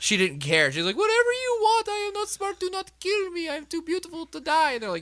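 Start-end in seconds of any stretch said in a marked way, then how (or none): 1.0-4.7 put-on very high sobbing in broken Russian accent. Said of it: "in broken Russian, he starts off fake crying".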